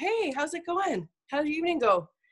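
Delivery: warm, friendly, easygoing and pleasant. Advising parents how to greet a child home for the evening, warm, pleasant voice. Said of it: "pleasantly in a warm voice say".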